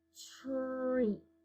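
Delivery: soft, slow, drawn-out word. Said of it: "Nice and slow".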